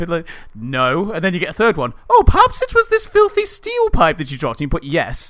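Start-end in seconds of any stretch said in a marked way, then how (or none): 2.1-4.6 put-on posh accent, much higher and louder. Continuing to act out a character offering another item, in a put-on posh voice, posh voice. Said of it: "in a really posh voice".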